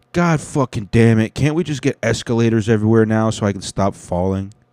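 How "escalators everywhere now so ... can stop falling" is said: ordinary talk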